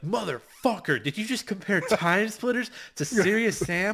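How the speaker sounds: mock, loud, high-pitched, enraged, furious screaming. Imagining an angry fan reacting to a comparison: imitating an angry fan screaming. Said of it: "someone screaming at me like".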